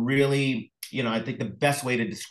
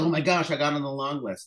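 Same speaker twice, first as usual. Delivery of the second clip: mock giddy, thrilled, pitched-up delighted gush; 4 semitones higher than usual. Retelling making an award long list: imitating being thrilled. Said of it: "you're just so thrilled".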